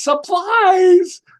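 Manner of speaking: very high, loud shout of supplies. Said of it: "She goes".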